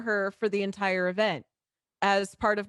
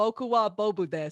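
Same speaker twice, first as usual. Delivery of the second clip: put-on American accent while speaking Japanese. Retelling how Bob struggled with Japanese: imitating Bob's American-accented Japanese. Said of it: "I love hearing Japanese and American accents".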